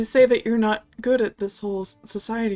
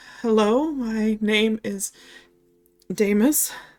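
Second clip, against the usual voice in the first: faltering, hesitant delivery. Told to say hello and give the name Damus, repeating it, hesitant. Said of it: "You are hesitating so much".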